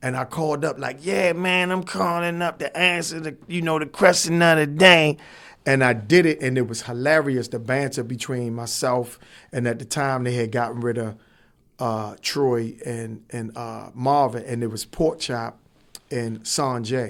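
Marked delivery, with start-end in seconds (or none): 1.0-5.2 put-on strung-out street addict voice, pitched up. Retelling calling in as a pretend caller; imitating a Lexington Market drug addict. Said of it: "the voice was like from the drug addicts".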